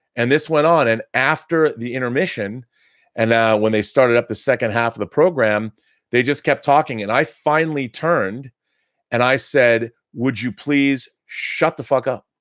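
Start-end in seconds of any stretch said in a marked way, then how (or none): 10.2-12.2 put-on very stern, firm, no-nonsense tone. Retelling telling noisy concertgoers to be quiet: retelling a stern demand. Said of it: "I said it very, uh, very sternly".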